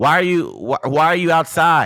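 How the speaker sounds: very loud drawn-out yell. Retelling how a sister answered through the mail slot: imitating sister yelling. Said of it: "she's yelling".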